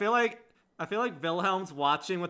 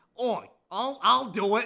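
goblin voice, much slower; 7 semitones higher, 4 dB louder than usual. A player voices a character who has just turned into a goblin, goblin voice. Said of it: "Owl's already turned into a goblin".

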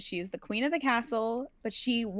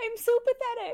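higher, cute, begging dog voice; 14 semitones higher than usual. Voicing a pet dog that begs for attention: voicing the dog as cute. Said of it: "looks up at you like this".

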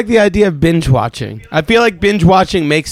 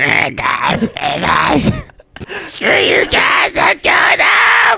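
put-on very high, raspy, creaky cartoon kid voice; 11 semitones higher than usual. Asked if he was doing Cartman, doing the Eric Cartman voice. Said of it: "we got a Cartman impression".

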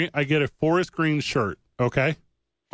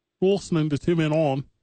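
put-on British accent. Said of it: "him in his British accent".

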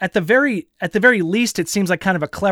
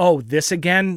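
put-on, tongue-in-cheek sarcastic tone. Quoting Neo in a dojo with Morpheus: sarcastic Neo imitation.

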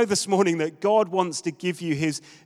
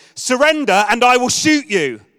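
put-on shrill, very loud, top-of-the-lungs child's yell; 5 semitones higher, 9 dB louder than usual. Retelling what a young son shouted while holding a water pistol: imitating a child shouting at the top of his voice. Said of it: "he shouted at the top of his voice".

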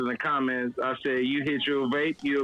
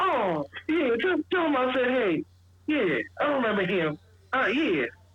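higher-pitched woman's voice; 10 semitones higher than usual. Retelling how a mom will answer the compliment: imitating a mom's reply. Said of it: "And she's like".

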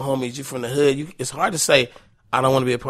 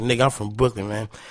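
put-on emotional speech, lower; 3 semitones lower than usual. Retelling what a man on a staircase said: imitating someone talking emotionally. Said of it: "he was talking, like, real emotional".

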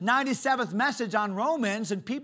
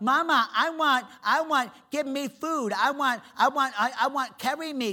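put-on baby talk, higher; 2 semitones higher than usual. Speaker acts out a five-year-old asking mama for things: imitating baby talk. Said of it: "still talks like a baby".

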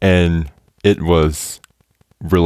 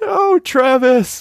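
high, slow, drawn-out anguished wail. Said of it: "I was like".

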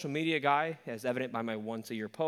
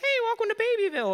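very high, forced, creepy falsetto host voice; 12 semitones higher, 8 dB louder than usual. Complaining about baby-doll videos, the speaker mimics the creepy guy's high-pitched voice. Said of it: "trying to have a high-pitched voice".

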